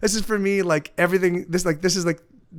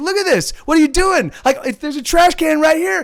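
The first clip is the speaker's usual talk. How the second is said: put-on scream, higher and louder; 9 semitones higher, 6 dB louder than usual. Retelling how a homeless man yelled at a littering man: imitating a man screaming. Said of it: "he starts screaming at this guy".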